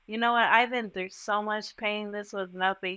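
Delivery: normal talking voice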